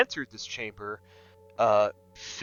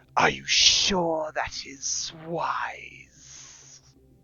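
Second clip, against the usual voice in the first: high, hissing, eerie whisper; 5 semitones higher than usual. Narrating a scene, voicing a whisper that fills the chamber: hissing whisper. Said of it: "There is a hissing whisper that".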